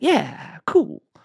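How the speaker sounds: easygoing, assured, chill tone, very high-pitched. Showing how they answer someone who washed their car, with totally chill confidence. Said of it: "my totally chill confidence in you".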